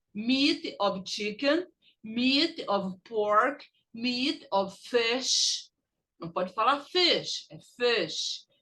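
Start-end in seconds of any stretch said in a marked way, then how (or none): 0.2-5.7 slow, carefully stressed, deliberate phrases. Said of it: "Repeat after me".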